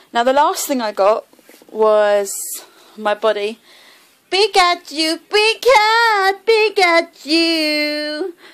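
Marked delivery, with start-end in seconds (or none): 4.3-8.3 bad squeaky creature voice, very high and stretched. Presenting the last thing they got, a Pikachu plushie, with a bad Pikachu impression. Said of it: "that's my really bad impression".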